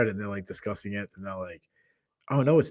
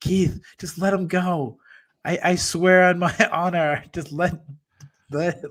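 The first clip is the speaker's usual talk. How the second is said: put-on hoarse, raspy, high-pitched screaming voice; 7 semitones higher than usual. Picturing Ben screaming at him, Keith, to let someone go: imitating Ben's raspy scream. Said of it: "Ben in his raspy voice screaming to me".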